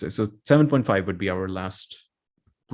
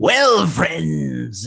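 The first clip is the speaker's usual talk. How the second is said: rough, high, creaky, loud cartoon villain voice; 7 semitones higher, 5 dB louder than usual. Trying a Skeletor voice on request, attempted Skeletor voice, sounds like Joker. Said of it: "this is totally Joker".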